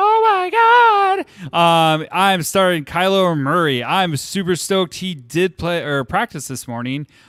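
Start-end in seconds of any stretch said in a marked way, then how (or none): 0.0-2.0 very high, excited, giddy, gushing schoolgirl voice. Showing how getting excited about own team sounds: excited schoolgirl voice. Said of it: "I get really excited and I sound like a schoolgirl".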